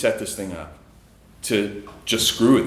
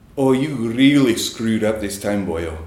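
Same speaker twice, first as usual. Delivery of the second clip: amateur, loosely attempted Scottish accent; 3 dB louder than usual. Retelling what a buddy said when he walked up; [name]'s Scottish accent. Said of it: "I'm going to try to do a Scottish accent here".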